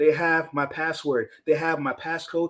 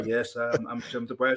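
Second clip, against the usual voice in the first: flat robotic voice, lower and quieter; 5 semitones lower, 5 dB quieter than usual. Imitating Mark Zuckerberg answering his family: robotic Mark Zuckerberg voice. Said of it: "he just talks like a robot".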